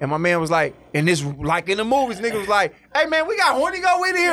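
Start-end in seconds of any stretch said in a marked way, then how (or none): 2.9-4.3 mock loud, very high-pitched movie-style holler. Speaker acts out the man he asked for weed answering: retelling a loud yell. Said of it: "you ain't got to yell like that".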